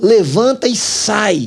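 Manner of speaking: high, furious, raging preacher-style yell. Retelling a pastor shouting at Democrats to leave: imitating a furious shout. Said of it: "Ele começou a gritar".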